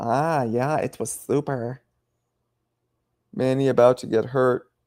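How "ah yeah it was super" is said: put-on lisping voice, slower. Describing the fighter they lost to, Oscar impression with a lisp. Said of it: "had a female voice. He did. He has the lisp. He's like".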